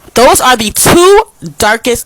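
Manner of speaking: full-throated, loud, high-pitched yelling. Complaining about a foundation's two darkest shades, yelling. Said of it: "I'm yelling".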